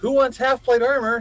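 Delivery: imitated shouting voice. Retelling how a player called up from below: imitating someone shouting up. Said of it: "So he shouts up to-".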